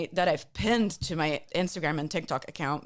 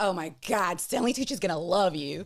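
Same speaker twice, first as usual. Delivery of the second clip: put-on New York lady accent. Recounting a press junket, the speaker imitates the publicist, a New York lady. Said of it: "She's this New York lady. She's like".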